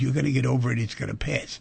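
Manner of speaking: ordinary talk, nothing marked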